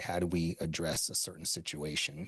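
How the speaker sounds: plain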